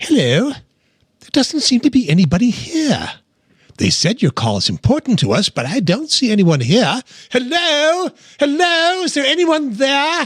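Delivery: very high, put-on little gnome character voice. Suggesting a bit, the speaker does a Roaming Gnome voice. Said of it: "this is my best impression of the Roaming Gnome".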